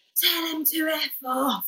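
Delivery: slow, high, dismissive shout.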